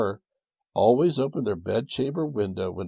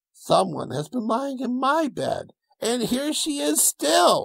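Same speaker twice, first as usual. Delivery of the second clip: very high, tiny little bear voice. Reading the little bear finding someone asleep in his bed; little wee bear voice. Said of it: "in his little wee voice".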